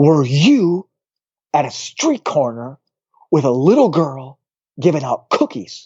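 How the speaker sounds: angry, confrontational, accusatory tone. Retelling what a man said while pointing at the speaker, mock-angry outburst. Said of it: "he's angry".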